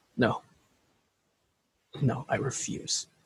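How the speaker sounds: very quiet, very slow whispered mutter under the breath. Voicing a grieving character refusing to accept a death: muttering under his breath. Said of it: "hear Buzz under his breath".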